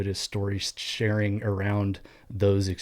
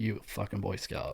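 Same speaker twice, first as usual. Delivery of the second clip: put-on drunken muttering under the breath, quieter; 8 dB quieter than usual. Retelling a senior guy's remark at a Christmas party: imitating a drunk muttering under his breath. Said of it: "makes a comment in passing under his breath".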